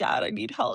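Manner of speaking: acted-out tearful pleading through crying. Retelling going to dad for help: imitating a crying plea. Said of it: "I went to him crying and was like".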